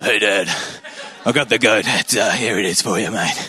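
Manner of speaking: deep tough-guy voice. Retelling a son fooling his blind father, in a mock-tough Chris Hemsworth voice. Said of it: "puts on his toughest voice".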